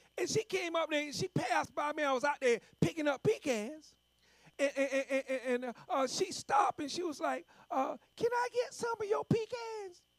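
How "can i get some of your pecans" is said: high-pitched woman's voice. Retelling a woman who stopped while he picked up pecans: her high-pitched voice. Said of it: "that high-pitched voice she had".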